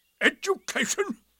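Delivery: very high pitch, scornful and bitter. Narrator reading a storybook character's one-word reply, bitter. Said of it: "Said Eeyore bitterly".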